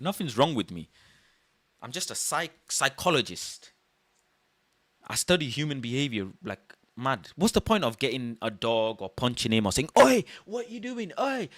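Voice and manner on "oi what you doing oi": put-on, very high, loud hollering shout. Acting out what someone might shout at a burglar: imitating someone shouting. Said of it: "shouting and all of this".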